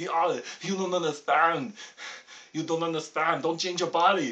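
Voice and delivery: very loud, insistent, booming dad voice at full volume. Imagining a father's reply to a coming-out as Arnold Schwarzenegger. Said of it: "if it was Arnold Schwarzenegger as my father".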